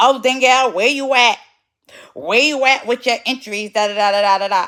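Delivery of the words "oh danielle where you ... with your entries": condescending, patronizing, talking-down tone. Retelling a meeting, the speaker imitates how someone spoke to them, mocking a condescending tone. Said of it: "you come at me in a condescending tone".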